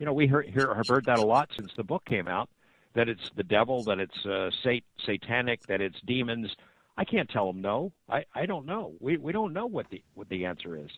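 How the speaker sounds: ordinary talk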